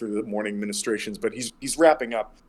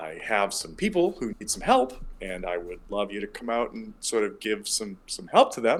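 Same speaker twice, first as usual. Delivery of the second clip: calm, peaceful tone, gently sing-song. Storyteller acting out Mishan speaking to someone sleeping in the shrine; Mishan, retold calm and peaceful. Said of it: "very sort of like calmly and peacefully is like".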